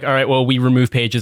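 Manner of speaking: plain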